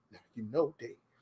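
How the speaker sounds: very quiet, hushed, put-on caricatured voice. Retelling what a boss said: caricatured put-on voice imitating boss. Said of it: "The voice kills his slave voice".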